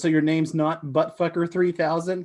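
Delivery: ordinary talk, nothing marked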